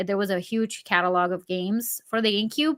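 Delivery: normal talking voice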